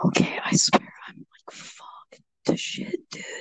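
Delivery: hushed, breathy whisper under the breath. Trying really hard not to be loud, the speaker talks to a companion whispering. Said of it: "I'm whispering".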